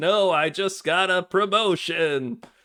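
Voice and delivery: mechanical droid voice, high and slow. Retelling a scene where a droid speaks while dying, droid impression. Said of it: "how was my droid impression?".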